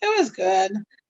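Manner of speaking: put-on hesitant, unconvinced, lukewarm, unsure tone. Imitating another speaker's reply about a movie, in a hesitant, unconvinced tone. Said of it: "in a kind of a maybe tone".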